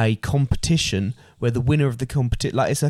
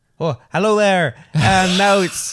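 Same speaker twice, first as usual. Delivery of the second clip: slow, drawn-out, higher-pitched fake Irish accent; 7 semitones higher, 4 dB louder than usual. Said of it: "lucky you can do Irish accents".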